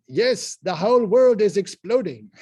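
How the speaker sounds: put-on German accent, very loud and high. Retelling a professor's answer in class: imitating a German accent. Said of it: "he talked with an accent kinda like that".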